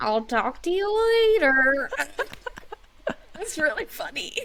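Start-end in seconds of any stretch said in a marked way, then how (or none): 0.0-1.9 put-on slow, dragged-out old-lady voice, higher and louder. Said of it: "She was like, like an old lady".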